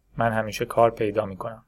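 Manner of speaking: ordinary delivery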